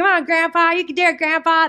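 very high, twangy backwoods screaming. Retelling a scene where a family screams at grandpa: imitating twangy backwoods screaming. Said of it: "they are so twangy and scary and backwoods".

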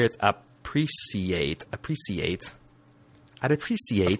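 appreciate said slowly, British pronunciation. Trying out a word for the other speaker: British accent. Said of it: "enunciating this Britishly".

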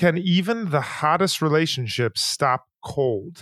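plain

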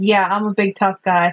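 ordinary delivery

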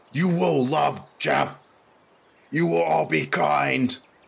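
furious raging shout, high and rough. Playing a raging character at the stage edge, shouting at the kids. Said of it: "start shouting at them like".

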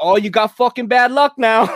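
put-on thick New York Italian accent. Retelling a story, the speaker quotes a woman reacting to an opened umbrella in a heavy New York Italian accent. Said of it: "that New York City kind of like heavy Italian accent".

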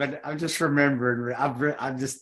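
words breaking into laughter while talking. Remembering a similar mix-up of their own: laughing while talking. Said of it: "I'm sorry laughing".

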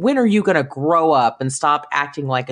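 ordinary talk

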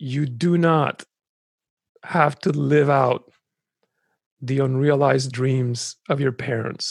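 very slow, deliberate delivery, each word weighed. A speaker addresses people who need to hear this, speaking really slowly. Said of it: "this I'm going to say really slowly".

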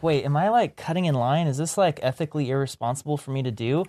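ordinary talk

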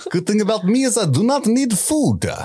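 put-on Russian accent, pitched very high. Joking about a volleyball rolling in as a character: Russian accent as Wilson. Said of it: "Russian volleyball Wilson".

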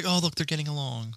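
acted fond, doting, motherly tone. Retelling how mom reacts when he and dad laugh: imitating mom's doting tone. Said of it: "She's like".

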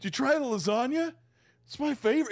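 awkward voice, pitched way up high. Acting out a sweaty buffet carver asking about lasagna: imitating an awkward carving-station worker.

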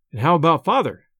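ordinary delivery

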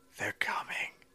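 whispered, breathy, hushed parrot voice. Reading a story where the parrot whispers: parrot whisper. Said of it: "This is my parrot whisper".

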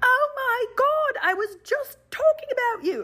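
bad, butchered Australian accent, very high, slow. Recalling running into Shelley on the beach path, bad Australian accent as Shelley. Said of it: "She's got an Australian accent. I just butchered it".

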